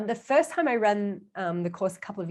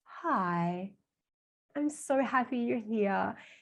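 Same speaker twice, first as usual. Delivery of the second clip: mock reassuring, soft, slow, very drawn out; 6 dB quieter than usual. Retelling a filmed greeting for the Nurturer type: imitating own reassuring tone. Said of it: "they need a little bit more of a reassuring kind of energy".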